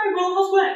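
put-on tiny, very high little old gnome voice. Voicing a train conductor character greeting a player: little old gnome voice. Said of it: "little old gnome that looks at you and goes".

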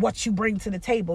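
mock horrible, nasty, hostile tone. Imitating someone asking a partner what they bring: horrible nasty tone. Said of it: "in such a horrible way".

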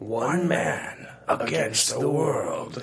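smooth trailer narrator voice. Like a trailer narrator from a later era, delivering the tagline in a more modern, restrained and matter-of-fact way than the old bombast. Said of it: "the 80s trailer voice would be".

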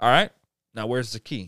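ordinary talk

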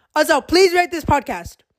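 enthusiastic, high, eager, close to the mic. Closing a podcast episode to listeners, yelling into the mic. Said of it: "I'm like yelling in the mic".

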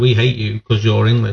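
plain

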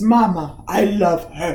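cartoon toad character voice. Describing a scene where toads fly by, one toad speaks; toad impression. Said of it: "That was a good impression".

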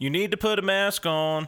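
put-on shout. Retelling what a passerby yelled over his shoulder, retelling a yell. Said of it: "he yelled out over his shoulder".

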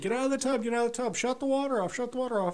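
acted-out scream. Retelling running to the bathroom as she screams from the shower, retelling a scream. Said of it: "I'm screaming".

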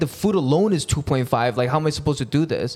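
plain

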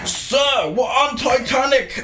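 put-on gimmicky British accent. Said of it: "a weird gimmicky British accent".

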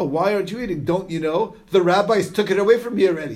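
acted dry, scornful, mocking sarcastic tone. Acting out how he heard the person's words, in a mock-sarcastic tone. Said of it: "He thought that this person was saying it in a sarcastic way. It's like he was saying like this".

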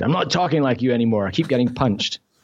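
normal talking voice

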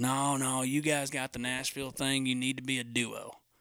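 put-on voice of a heavy smoker. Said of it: "talk like that 'cause Gary smokes about two packs".

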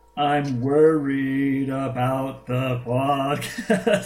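very slow, drawn-out, digital robot voice.

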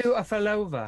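put-on high, loud British accent. Speaker joking a player should fall down on purpose, Austin Powers British accent. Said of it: "Why do they have British accents?".

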